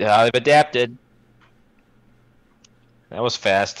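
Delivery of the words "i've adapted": loud shouted declaration. Playing a character in the scene and yelling the line: yelling. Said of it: "I'm just gonna yell it".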